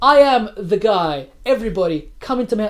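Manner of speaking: loud, slow, grand, regal booming voice. Imitating how T.J. Miller talks in season three: T.J. Miller regal voice. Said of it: "regal voice".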